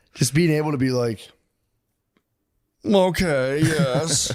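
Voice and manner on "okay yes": put-on British accent done for fun, pitched higher. Imitating a king's hand reacting calmly: imitating a British accent. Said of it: "Just British".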